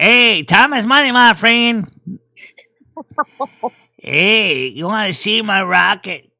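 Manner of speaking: put-on leaning into a New York accent, slow and unhurried. Explaining where goblin voices come from, speaker demos a World of Warcraft goblin voice. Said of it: "they sound like New Yorkers".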